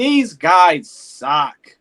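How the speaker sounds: put-on, loud, fed-up exasperated yelling outburst. Recalling a family member yelling at games: imitating someone yelling in exasperation. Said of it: "he would just yell things".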